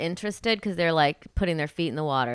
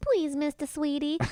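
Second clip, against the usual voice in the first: very high, wheedling, charming sweet-talk; 10 semitones higher than usual. Imitating the kid's charm offensive at bedtime: imitating a child's manipulative charm. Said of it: "manipulative charm offensive".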